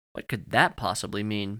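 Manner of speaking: ordinary delivery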